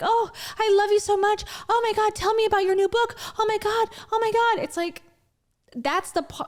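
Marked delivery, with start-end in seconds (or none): 0.0-4.6 put-on, high, starstruck, adoring, fawning gush. Mocking how Rachel fawns over a guest during interviews: imitating Rachel gushing. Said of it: "sucks his dick during interviews".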